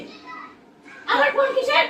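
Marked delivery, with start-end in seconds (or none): 1.1-1.8 higher, sharper scolding tone.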